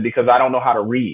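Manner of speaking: put-on sassy tone with attitude. Retelling an answer to a teacher asking for the book: imitating saying it with attitude. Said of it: "I kinda said it with an attitude".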